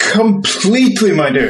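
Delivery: condescending, talking down. Insisting they are perfectly fine on their own, a speaker replies: patronizing. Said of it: "That wasn't at all patronizing".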